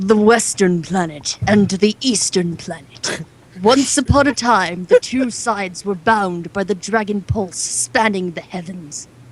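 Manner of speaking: grand, dramatic storybook narrator voice. Reading the opening of a book aloud in a dramatic narrator voice. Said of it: "in my dramatic narrator voice".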